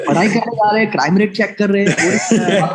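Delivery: high, fast mocking voice.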